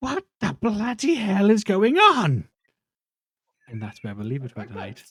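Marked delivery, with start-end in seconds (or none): 0.0-2.5 woman's very high, very loud, swooping calling voice. Narrating a scene, a woman calls out from the hallway, woman's voice calling out. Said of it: "you hear a woman's voice calling out".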